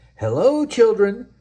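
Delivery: very high-pitched, sugary-sweet voice. A returning teacher greets the children, in a sweet voice. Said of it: "someone said in a sweet voice".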